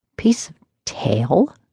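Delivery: outraged, offended, indignant half-whisper. [name] responds to Holt's answer to the questioner: indignant half-whisper. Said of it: "she whispered, indignant".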